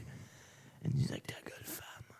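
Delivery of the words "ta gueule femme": soft, sharp, snappish whisper.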